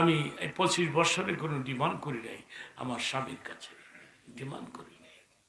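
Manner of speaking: hushed, soft, whispered pleading.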